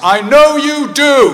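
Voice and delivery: shrill, very loud, high-pitched call. Retelling his dad calling after him as he leaves the hospital ward: loud voice. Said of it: "in a loud voice".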